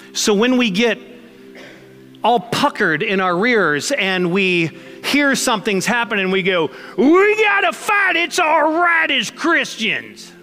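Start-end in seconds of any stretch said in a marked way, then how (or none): 6.9-10.2 put-on very high, thick, over-the-top rural Southern accent. Pastor acting out how Christians react to news, in a Southern Bubba accent. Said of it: "I'm doing my Southern Bubba inbred accent there for you".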